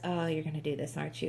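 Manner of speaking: mock weary, resigned sigh, low and soft. Retelling how a character reacts to the heroine: imitating a resigned sigh. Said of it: "He makes deep sighs and goes".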